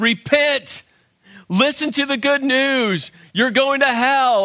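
put-on high street-preacher crying out. Retelling what Bible college students shouted at passersby: imitating people screaming. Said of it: "all just screaming at people".

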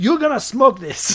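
put-on very loud, very high South African accent. Retelling what a guide told them to do: imitating a South African accent. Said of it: "has this awesome South African accent".

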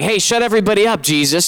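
called out lightly. Retelling how the Pharisees shouted at Jesus: retelling a shout. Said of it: "They're shouting".

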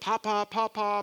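play-acted frantic, hysterical screaming, drawn out. Retelling how a friend came running in, imitating her hysterical screaming. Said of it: "and she's screaming".

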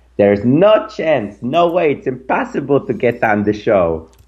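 put-on high-pitched Yiddish accent, old grandmother voice. Telling how their 87-year-old grandmother answered, in her Yiddish accent. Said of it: "she said in her Yiddish accent".

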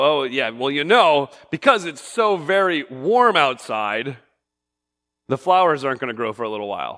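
mocking, sarcastic tone. Showing an example of saying something sarcastically: sarcastic tone. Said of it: "you know I'm being sarcastic".

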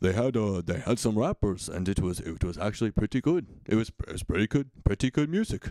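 put-on voice with slight Dutch accent. Retelling grandpa's review, imitating grandpa with a slight Dutch accent. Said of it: "now he sounds a little bit Dutch".

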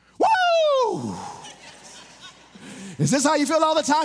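loud, high, swooping excited burst with drawn-out woo. Retelling a minister's reaction ten seconds after coffee, acting out a loud outburst. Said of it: "He got really loud".

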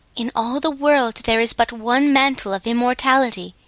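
plain

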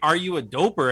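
mock repeated confrontational yelling. Retelling a camping story, imitating someone yelling into the bushes. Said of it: "So he just kept yelling".

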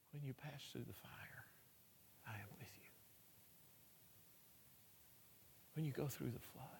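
whispered, hushed, barely audible, very quiet. Recalling reading scriptures and praying over her, retelling a whispered reading. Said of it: "I'm just whispering".

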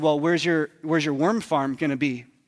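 put-on patronizing voice. Retelling a man quizzing the speaker about gardening: mock-condescending question. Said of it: "And condescendingly".

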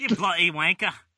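bad put-on Australian accent. Showing off an accent to someone who calls it bad, bad aussie accent. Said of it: "This is me Aussie accent".

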